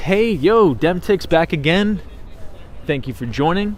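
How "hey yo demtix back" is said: usual speaking voice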